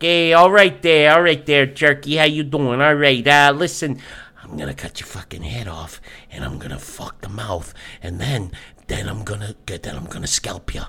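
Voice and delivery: put-on skeezy, sleazy, psychotic voice. Speaker describes a sweaty, balding villain, then acts him out: imitating a skeezy psycho. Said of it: "pure skeezy psych- psychotic".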